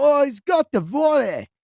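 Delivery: very high, badly put-on British accent. Imitating a game's soccer announcer calling a play: bad british accent.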